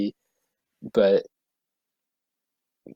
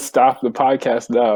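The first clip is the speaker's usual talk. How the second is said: plain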